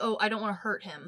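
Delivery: ordinary talk, nothing marked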